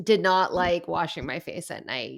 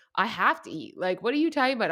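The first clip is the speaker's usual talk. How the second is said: ordinary talk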